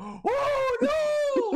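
mock shrill, very high scream, long drawn-out no. Retelling your own reaction the moment you died, screamed out. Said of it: "I screamed out".

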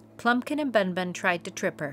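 ordinary delivery

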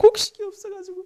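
high, loud crying, pleading voice. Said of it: "이렇게 울고 있는 거야".

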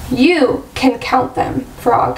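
ordinary delivery

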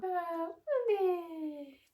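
high-pitched, drawn-out sing-song voice.

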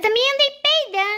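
put-on high-pitched little boy voice.

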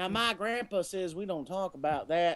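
soft, put-on West Southern accent. In a scene about crossing the border, a character answers in a west southern accent. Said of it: "I don't know why I'm doing it with a West Southern accent".

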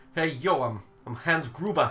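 put-on Brooklyn accent. Redoing the bit, the speaker goes for a Brooklyn guy accent. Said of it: "I was going more for a Brooklyn guy".

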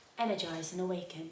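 calm, soothing yoga-class instructor voice. Reading out a product name while trying products, in a yoga voice. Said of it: "That's her yoga voice".

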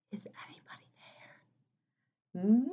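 very soft, hushed whisper. Reading a children's story, the narrator voices a bear calling into a cave: softest voice. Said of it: "And with his softest voice".

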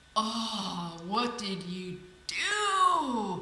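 put-on very slow, swooping sarcastic groan, do stretched out. A driver reacts to a passenger handing him a broken doorknob, in a sarcastic groan. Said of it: "He groaned sarcastically".

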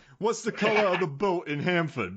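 bad Brooklyn accent. Attempting a line another speaker asked for, speaker slips into a bad Brooklyn accent. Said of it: "It's a guy from Brooklyn right there".

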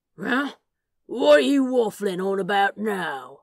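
loud, baffled, confused growl. Narrator reads a character's reply to a companion, confused growl. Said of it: "growled out a confused".

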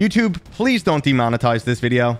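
ordinary talk, nothing marked

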